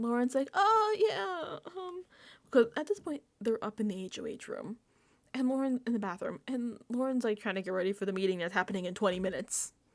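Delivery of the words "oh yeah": very high-pitched, panicked voice. Retelling a houseguest's flustered reply to another player: imitating someone panicking. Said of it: "Lauren panicking".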